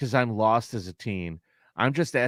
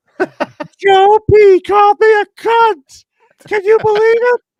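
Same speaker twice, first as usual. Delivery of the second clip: put-on shrill, booming, drawn-out old lady voice, very high; 18 dB louder than usual. Retelling pretending to be an old lady calling the grocery store: old lady voice. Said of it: "That's the old lady voice you did".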